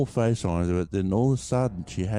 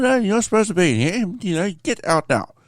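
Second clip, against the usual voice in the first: put-on very high, shrill, loud, prim, old-school nurse voice yelling; 11 semitones higher, 6 dB louder than usual. Retelling a nurse ordering the speaker out, in a proper-spoken old nurse voice. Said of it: "real proper spoken ones".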